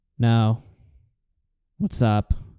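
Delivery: dead, very low, flat drone with no energy. Retelling a debate where the caller stayed flat: Tonka Saw, no energy. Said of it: "no energy".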